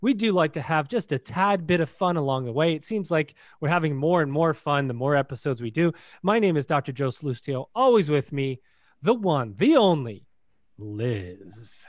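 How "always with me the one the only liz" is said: slow announcer voice, every word stretched, one longest. Podcast host introducing his co-host by first name, stretched-out delivery. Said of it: "You stretch it out and draw it out".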